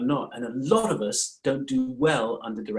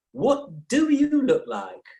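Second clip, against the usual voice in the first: very high put-on old grandmother accent; 13 semitones higher, 4 dB louder than usual. Recalling what their grandmother used to say, the speaker is imitating grandmother. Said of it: "she used to say".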